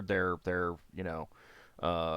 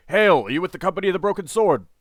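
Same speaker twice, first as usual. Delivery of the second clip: booming, very loud, very high pitched shout; 11 semitones higher, 11 dB louder than usual. Game narrator voices a figure hailing the party, shouting out. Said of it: "he shouts out".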